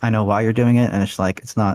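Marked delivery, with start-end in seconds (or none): none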